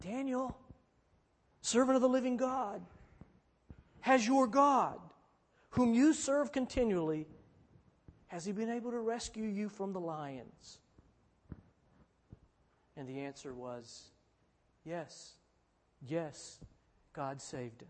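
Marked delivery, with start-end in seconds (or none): 0.0-10.8 anguished, pleading call. Voicing the king calling out to Daniel, acting out an anguished call. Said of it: "in his anguished voice".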